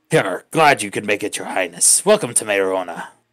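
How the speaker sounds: low, swashbuckling put-on pirate captain voice. The game narrator voices a Phoenix greeting the players at the city gates, in a pirate voice. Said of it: "I got the pirate voice".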